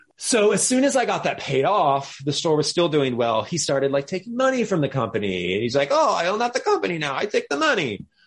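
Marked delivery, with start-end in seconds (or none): 5.9-8.0 worst fake Italian accent, pitched high. Retelling what a man said while taking company money, the speaker uses a bad Italian accent. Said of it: "It was my worst Italian accent".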